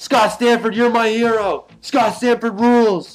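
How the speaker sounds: very high, loud, drawn-out yell. Retelling what the crowd yelled at the ring announcer: retelling crowd yelling. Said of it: "we're yelling, like".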